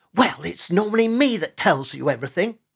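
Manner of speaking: hissed, sharp delivery. He answers the one who teased that he knows everything; hissed. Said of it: "Oscar hissed".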